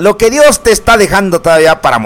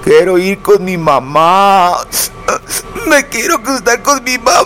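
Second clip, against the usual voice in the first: whiny, wailing crybaby voice. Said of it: "¿por qué chillas?".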